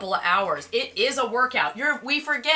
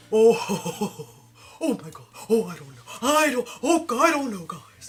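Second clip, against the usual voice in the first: timid, fearful cartoon lion voice. A voice actor demoing a character voice, in a Cowardly Lion voice. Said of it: "my Patrick always starts sounding like the Cowardly Lion".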